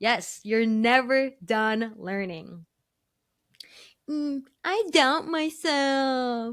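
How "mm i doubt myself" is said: slow, pouty voice with "myself" dragged out. Prompted to say a line, the speaker answers in a pouty Susie voice. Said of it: "your pouty Susie voice".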